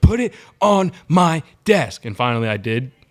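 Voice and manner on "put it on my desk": rude, loud, shrill, drawn-out yelling. Retelling how a woman kept yelling her demand, retelling a woman yelling. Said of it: "And she kept yelling".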